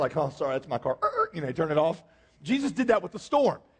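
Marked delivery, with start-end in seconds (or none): 0.2-1.0 acted embarrassed, sheepish tone. Acting out someone walking out to a car alarm: acting embarrassed. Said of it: "they're kind of embarrassed".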